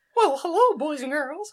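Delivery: loud, high-pitched cartoon squeak. Mid-chat with a friend, greeting boys and girls in a Minnie Mouse voice. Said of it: "we should do a little Minnie Mouse section".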